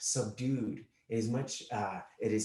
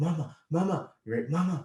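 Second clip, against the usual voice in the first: put-on high, frightened, panicky little boy voice; 5 semitones higher, 5 dB louder than usual. Retelling a lost little boy in a theater line, imitating a panicky little boy. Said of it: "in kind of like a panicky voice".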